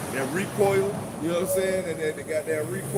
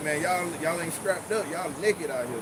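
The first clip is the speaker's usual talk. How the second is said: ordinary talk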